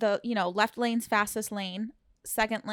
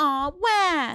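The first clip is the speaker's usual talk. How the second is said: sarcastic fake sobbing like a crying baby; 6 semitones higher, 4 dB louder than usual. Advising how to answer people who get mad, the speaker demonstrates: mock fake crying. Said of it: "just go".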